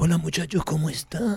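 hushed, flirtatious lady's-man half-whisper. Imitating a heartthrob greeting the studio: imitating Giancarlo's half-whisper voice. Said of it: "Él habla siempre con voz de susurro".

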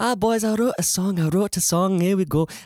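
high-pitched Liverpool accent, done as an impression. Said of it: "your incredible [name] impersonation".

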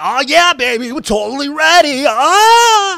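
fake hype, very high, loud, slow yell. Answering a co-host who wants more enthusiasm: mock over-the-top enthusiasm. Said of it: "is that what you want?".

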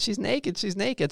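mock high children's screaming and yelling between laughs. Retelling what the kids yelled about the neighbor: imitating kids screaming.

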